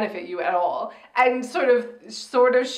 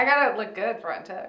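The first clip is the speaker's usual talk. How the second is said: plain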